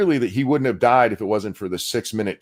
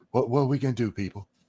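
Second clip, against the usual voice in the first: mock dramatic whisper, quieter; 5 dB quieter than usual. Mocking a father speaking at a gathering: mock dramatic whisper. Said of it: "I'll whisper because that means I'm being dramatic".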